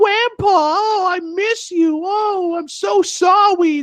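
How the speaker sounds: put-on very high, slow, loud, drawn-out baby talk. Discussing a game character, the speaker tries Charlotte's baby talk voice. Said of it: "the little cleric girl who talks with baby talk".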